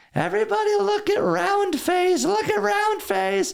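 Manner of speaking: put-on very high, childlike prepubescent voice. Retelling pointing at someone and calling him a name, prepubescent high voice. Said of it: "like prepubescent high voice I could".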